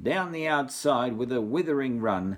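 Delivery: ordinary delivery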